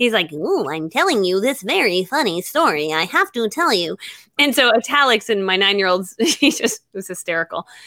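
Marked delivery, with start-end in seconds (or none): 0.3-4.0 tiny monster character voice. A parent imitates their nine-year-old reading italics aloud, in a little monster voice. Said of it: "he would sound like a little monster or something".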